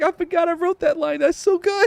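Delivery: mock giggling through the words, high-pitched and laughing. Retelling how an author reads his own book: imitating high-pitched laughter while talking. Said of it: "he'll start laughing with his high pitched".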